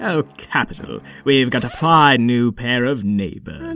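voice of a huge, giant troll. Reading a story, the troll leans down to greet two little children: giant troll voice. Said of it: "warty toe of a 20-foot-tall troll! / who had bumped into the hairy, warty toe of a 20-foot-tall troll! Hi there, troll. You're not gonna, mess up our house and stuff, are you? Yeah, you go ahead and t".

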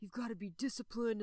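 derisive, poking-fun, mocking voice. Retelling what people said about discipline: imitating in a mocking voice. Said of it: "making fun of it with my voice".

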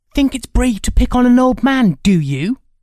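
very high, very loud, demanding, challenging tone. Kay confronts the boy who fell in the dirt, demanding. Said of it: "he demanded".

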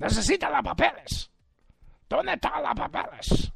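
voice pushed high and rough. Demanding that documents be released, joking: Puerto Rican Alex Jones voice. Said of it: "sounding like the Puerto Rican freaking Alex Jones".

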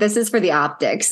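ordinary delivery

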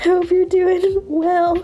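crying, very high and tearful voice. Speaker records a video message to Jeff: crying. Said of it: "I'm crying".

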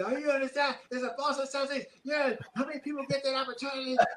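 high, worked-up rant, pitched way up. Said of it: "You sounded like Johnny Most just now".

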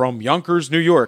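ring announcer introduction voice. Retelling how someone introduced himself: the Fink's ring announcer voice. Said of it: "in the Fink voice".

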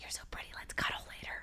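very hushed, soft, very quiet whisper. Retelling what a four-year-old co-star said between takes: imitating a whisper.

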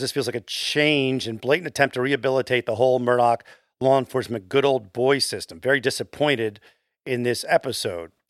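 ordinary talk

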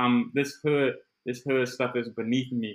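ordinary talk, nothing marked

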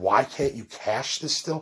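plain

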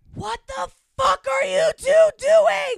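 loudest possible, very high, drawn-out shout. Retelling how someone caught the speaker and a friend: retelling a very loud shout. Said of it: "in like the loudest voice I have ever heard them use".

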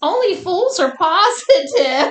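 very high, loud nasal whine. Reading aloud a story about an ex: high-pitched nasal whine like Steve Urkel. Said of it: "in a high-pitched nasal whine reminiscence of Steve Urkel".

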